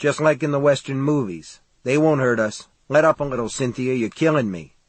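ordinary delivery

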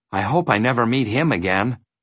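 ordinary delivery, nothing marked

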